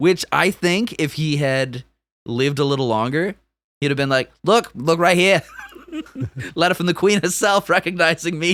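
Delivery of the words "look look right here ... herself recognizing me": loose, vague put-on Australian accent, pitched up. Imagining what a principality's founder would have said, in a put-on, kind of Australian accent. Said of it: "What is that accent?".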